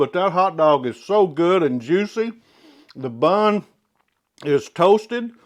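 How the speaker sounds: talking with mouth full. Speaker tasting the hot dog they just grilled, talking with mouth full. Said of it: "sorry, my mouth's full".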